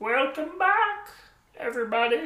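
very high-pitched puppet voice. Host returns from a break and welcomes everybody back in a Kermit the Frog voice. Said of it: "Was that your Yoda impression?".

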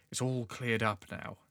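soft conspiratorial voice. A character in the story speaks to the listener, in a lowered voice. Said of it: "he lowers his voice and looks conspiratorially towards you and says".

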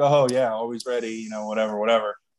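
acted mock-joking reply. Retelling your answer when someone told you to be ready to work tonight, retelling a joking reply. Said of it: "And I'm jokingly like".

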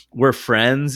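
ordinary talk

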